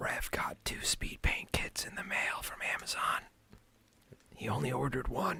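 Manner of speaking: very quiet, hushed, secretive whisper. Telling a little secret so nobody else hears: whispering. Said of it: "I gotta whisper it".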